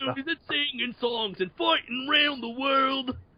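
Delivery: put-on Australian accent. Riffing in a group conversation, the speaker does an Australian accent impression. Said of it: "your Australian accent's better than mine".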